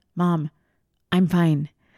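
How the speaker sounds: acted earnest, dead-serious, low, reassuring tone. Retelling how her child answered a worried question: imitating a serious reply. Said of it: "look at me so serious and be like".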